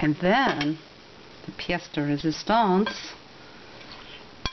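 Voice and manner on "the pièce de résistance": put-on slow, flourishing French-accented speech. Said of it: "I don't know why I'm speaking French".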